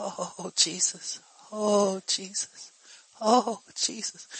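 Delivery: put-on tiny, soft, teeny voice, very slow and drawn-out. Speaker recalls coming into her room and hearing a little teeny voice. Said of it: "I could hear this little teeny voice".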